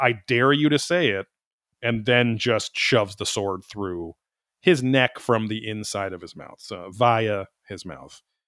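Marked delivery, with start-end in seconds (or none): 0.0-1.3 imitated scream, mock-screaming. Recounting a story where a man holds a sword to another; retelling a scream. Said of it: "And so then he screams".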